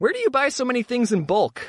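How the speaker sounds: ordinary delivery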